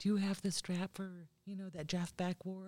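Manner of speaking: barely-there, very soft, hushed voice. Retelling what a friend would ask, quoting him in a very soft voice. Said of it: "Just in a very soft voice".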